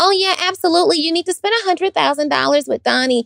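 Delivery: very high, unauthoritative, uncommanding voice. Demonstrating how not to sound when telling people their next step, non-commanding voice. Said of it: "you can't sound like this".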